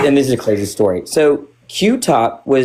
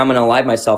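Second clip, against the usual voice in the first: mock tearful crying voice. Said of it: "crying and saying".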